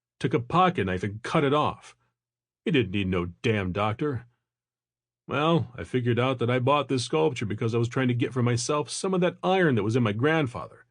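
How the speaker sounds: ordinary delivery, nothing marked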